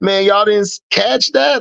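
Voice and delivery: incredulous exclamation.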